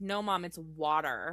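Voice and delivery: put-on American accent. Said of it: "her daughter's accent would be like".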